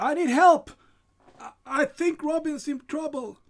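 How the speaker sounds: loud high shouting. Narrator voicing a person who opens the door with a sword, shouting for help. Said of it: "And this person shouts".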